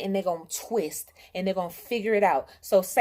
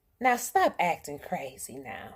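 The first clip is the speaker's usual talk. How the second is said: put-on low, calm, patient, even-keeled voice; 4 semitones lower, 4 dB quieter than usual. Speaker retells how a woman answers her impatience; imitating her calm, patient voice. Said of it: "In her calm and patient Taurus voice".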